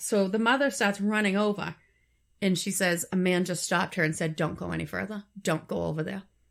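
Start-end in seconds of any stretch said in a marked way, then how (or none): none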